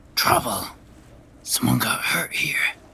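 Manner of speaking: hushed whisper pushed through the teeth. Game master voicing a character warning a companion; whispering through teeth. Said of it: "now he's whispering".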